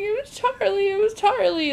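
high-pitched, panicked, pleading voice. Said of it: "she's freaking out".

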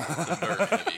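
high, loud mock heavy growl, belted out.

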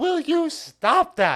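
very high, loud, slow, drawn-out squeak. Retelling a movie dinner scene, quoting Leo: imitating Leo. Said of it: "And then Leo's like".

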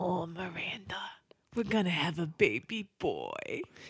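put-on spoken softly in a Brooklyn accent. Asked how it goes, the speaker performs their only accent: Steve from Sex and the City. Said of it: "the only accent I can really do is Steve from Sex and the City".

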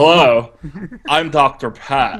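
slow, measured, unhurried delivery. Reading a website's welcome text aloud in a Doctor Steve voice. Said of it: "I'll do it in a, a, a Doctor Steve voice".

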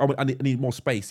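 ordinary delivery

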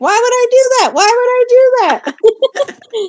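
very high, shrill shriek, dragged out. Recounting looking through photos at a restaurant; retelling a scream. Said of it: "i'm like screaming like".

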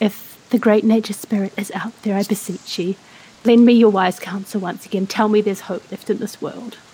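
hushed whispered voice. A player voices their character staring up at the sky, whispering. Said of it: "I'm just going to whisper out".

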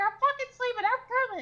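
high, shouted, yelling delivery. Speaker retells Dakota answering from his room, imitating Dakota yelling. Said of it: "he's yelling at me in his room".

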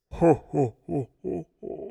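very slow, rough, creaky slug-monster ho-ho-ho, each ho drawn out. Welcoming listeners back at Christmas time, doing a Santa laugh as Jabba the Hutt. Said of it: "my Santa Claus meets Jabba the Hutt".

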